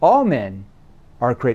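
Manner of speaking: deliberate, slow, paced-out cadence with pauses. Demonstrating how a famous speech paces its words, slow, paced-out delivery. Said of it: "See how he paces that out?".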